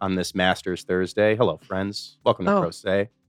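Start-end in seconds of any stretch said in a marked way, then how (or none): 1.4-3.1 sports commentator voice. Greeting the listeners on Masters Thursday: Jim Nantz voice. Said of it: "in my finest Jim Nantz voice".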